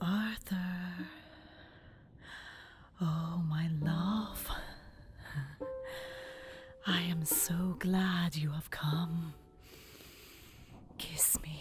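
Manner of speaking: soft, voluptuous, sensual, seductive voice. Opening her eyes, she speaks to Arthur, soft, voluptuous voice. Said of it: "said in a soft, voluptuous voice".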